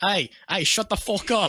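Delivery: put-on British accent. Retelling what the man in the next jail cell said: imitating a British accent. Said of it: "That's Australian".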